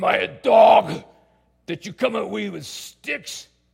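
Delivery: very loud, slow, lumbering, creaky, rough giant voice. Reading the story of the Philistine speaking to David, in a giant voice. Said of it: "I'm going to use the giant voice".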